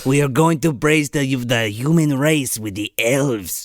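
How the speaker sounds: thick, full-on, put-on German accent. Among friends trading voices, going full Peter Lorre. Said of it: "now you're just gone full Peter Lorre".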